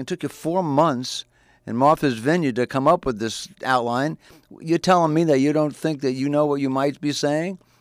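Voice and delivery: ordinary talk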